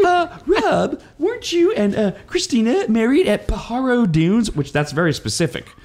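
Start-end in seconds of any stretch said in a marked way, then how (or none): 0.0-4.5 voice pitched very high. Retelling what a caller said on the air, imitating Kyle's voice. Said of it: "I'm working on my Kyle voice".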